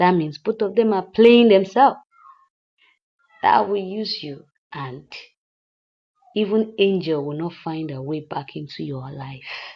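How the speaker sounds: plain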